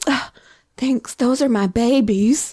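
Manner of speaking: put-on tiny Southern grandma voice and accent. Retelling the twins' owner thanking her for the dog treats, Southern grandma voice. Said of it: "In her little like Southern grandma voice".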